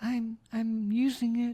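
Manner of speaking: put-on tiny squeaky child voice, very high. Describing a kid answering from inside a locked porta potty, in a little squeaky kid voice. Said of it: "you hear a little squeaky voice inside and say".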